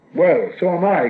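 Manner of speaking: high cry, calling out. Narrating Bilbo's reply to Gollum: cried out. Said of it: "cried Bilbo".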